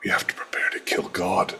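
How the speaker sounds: muttered very quietly under breath. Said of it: "I say very, very under my breath".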